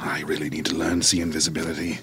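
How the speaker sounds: mumbled under the breath. A character trying not to make a fuss, muttering under his breath. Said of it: "I was muttering under his breath".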